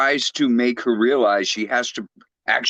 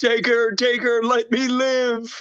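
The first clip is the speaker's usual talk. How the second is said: put-on very high, drawn-out cowardly yelling; 12 semitones higher than usual. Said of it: "Simon yelling out".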